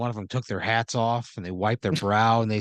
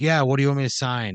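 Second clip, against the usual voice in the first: a little cocky attitude; 4 semitones higher, 4 dB louder than usual. Voicing a ballplayer walking over to sign something: acting cocky. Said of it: "A little cocky".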